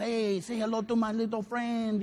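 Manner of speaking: heavily exaggerated put-on Spanish accent.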